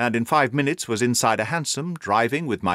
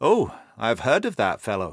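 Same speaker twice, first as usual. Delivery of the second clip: plain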